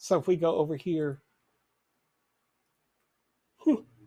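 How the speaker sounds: talking while yawning. Someone giving a screen walkthrough to viewers, yawning mid-sentence. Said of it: "I am yawning all day today".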